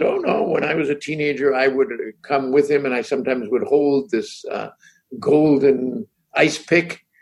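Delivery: ordinary delivery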